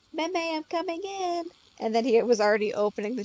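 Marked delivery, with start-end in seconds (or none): 0.1-1.4 put-on cute little kid voice, high and slow. Retelling how a child announced himself at the door: imitating a cute little voice. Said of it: "in the cutest little voice".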